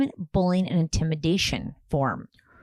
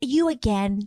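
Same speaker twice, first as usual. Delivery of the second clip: put-on child voice, scolding tone, higher; 5 semitones higher than usual. Acting out kids scolding their mom: imitating kids scolding a parent. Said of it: "the kids are like".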